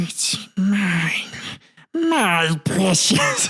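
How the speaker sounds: very slow, crazed, half-mad drawn-out muttering. Retelling how a crazed woman muttered to herself: crazed Smeagol muttering. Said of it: "she went all Smeagol on people".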